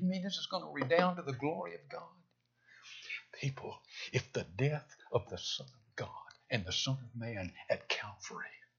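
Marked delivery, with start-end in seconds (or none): 0.0-2.0 mock scornful, sneering, quick, higher-pitched disbelief. Addressing people, acting out what they will say in dark days: mockingly quoting people. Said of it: "You're almost mockingly going to say".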